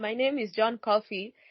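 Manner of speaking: ordinary talk, nothing marked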